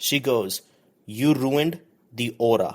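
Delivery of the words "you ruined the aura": put-on heaviest thick Indian accent, laid on. Quoting their mom after baking went wrong, in the thickest Indian accent. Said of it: "in the most thickest Indian accent".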